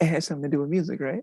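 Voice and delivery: hushed whisper. Repeating the other person's question back to them, whispering. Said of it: "Why are we whispering?".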